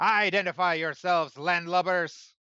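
shouting pirate captain voice. Voicing a sideburned captain at a Gatling gun: pirate captain yelling. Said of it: "He yells at Sakaar".

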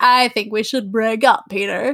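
imitated drunk voice. Retelling a character's breakup line to a co-host, imitating a drunk person. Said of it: "Perfect impersonation of a drunk person".

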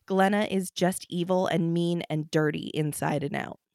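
ordinary talk, nothing marked

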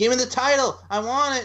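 mock whiny complaining voice, very high. Predicting a title match, acting out Alexa Bliss after losing: mock-whiny Alexa Bliss. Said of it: "it's like whiny".

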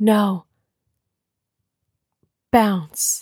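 very slow, each word dragged out separately. Retelling a scene where a character answers, imitating very slow speech. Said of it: "It was this slow".

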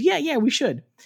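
blurted out high and flustered. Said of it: "poor Jen is so flustered that she goes".

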